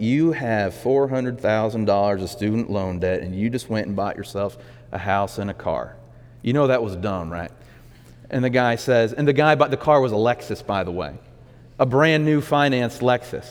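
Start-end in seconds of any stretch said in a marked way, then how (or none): 0.0-7.5 little, mild southern drawl. Quoting what was said to a guy with student loan debt, in a Dave Ramsey southern drawl. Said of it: "with his little southern drawl".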